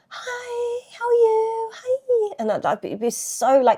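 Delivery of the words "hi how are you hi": very high, slow, drawn-out throaty head voice. Retelling own past greeting when meeting people: imitating own high throaty voice. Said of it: "in the back of the throat, like, so up here".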